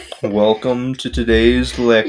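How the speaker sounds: put-on boring, dull, flat monotone lecturer voice. Imitating a college professor of the speaker's, boring monotone professor voice. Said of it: "he was like really boring and monotone".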